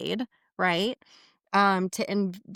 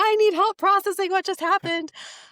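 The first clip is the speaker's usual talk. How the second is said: mock, shrill, very high, rushed, frantic, panicked screaming; 11 semitones higher, 4 dB louder than usual. Retelling a phone call asking for help, the speaker acts out frantic screaming. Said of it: "I called her screaming".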